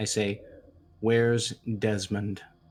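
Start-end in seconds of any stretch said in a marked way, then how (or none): 1.0-2.4 hushed low whisper. In a game, a character cocks a gun's hammer and asks a question: low whisper. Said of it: "I whisper in a low voice".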